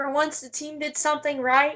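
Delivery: ordinary talk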